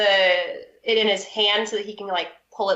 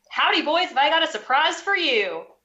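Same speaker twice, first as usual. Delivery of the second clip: rowdy, exuberant, boisterous, pitched-up voice; 7 semitones higher than usual. Pushing someone forward, a character greets the boys, most boisterous voice. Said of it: "in my like kind of most boisterous voice".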